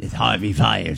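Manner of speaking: low, creaky put-on impression voice.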